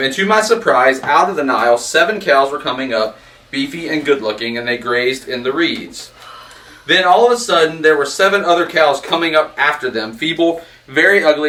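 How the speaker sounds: ordinary talk, nothing marked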